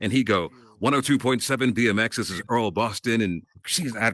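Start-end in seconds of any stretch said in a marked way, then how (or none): 0.8-3.2 polished, smooth radio DJ announcer delivery. Retelling a radio personality's greeting heard growing up: imitating a smooth radio announcer. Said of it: "this smooth delivery".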